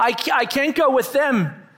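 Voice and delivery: slow high gasping. Much-afraid clings to the shepherd for support, gasping. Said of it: "she gasped".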